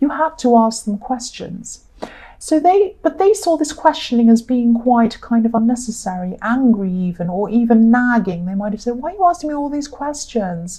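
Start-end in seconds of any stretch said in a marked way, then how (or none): 8.9-10.8 put-on, high-pitched, whining childlike voice. Imitating the person being questioned, imitating someone sounding childish. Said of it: "They sound very like a child".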